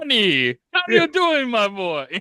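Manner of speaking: high, very slow, stretched-out put-on character drawl. Showing the others how Watto sounds: Watto voice. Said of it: "your Barca sounds like Watto".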